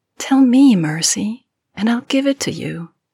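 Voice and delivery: tender coaxing affection. Reading a story, Christabel speaks to Mercy in a soft, affectionate tone. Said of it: "Her tone slips away from playful and dominating to something softer, horribly affectionate".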